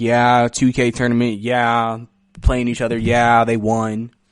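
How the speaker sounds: mocking flat unexcited delivery. Mocking a tournament host's flat delivery: imitating Ronnie 2K's uncharismatic voice. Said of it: "he just sounds like he's sucking the charisma out of the room".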